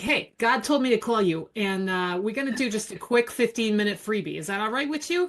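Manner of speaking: put-on New Jersey accent laid on strong. Retelling a cold call from a psychic, imitating her strong New Jersey accent. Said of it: "The accent was just".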